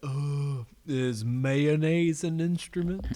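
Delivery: slow, drawn-out, dragged cartoon voice. Quoting a dopey cartoon character after a joke about him: Patrick Star voice. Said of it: "something Patrick would do on SpongeBob".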